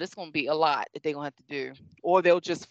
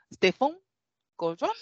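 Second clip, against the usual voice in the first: put-on French accent, pitched up; 8 semitones higher than usual. Trying to pronounce someone's name right: French accent. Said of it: "say it with a French accent".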